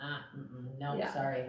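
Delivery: put-on curt, dismissive voice. Imitating another speaker shutting people down: imitating someone curtly shutting people down. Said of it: "You're really good at shutting people down like that".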